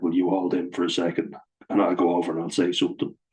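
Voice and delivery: ordinary talk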